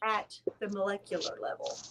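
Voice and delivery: low, quiet, dead serious delivery.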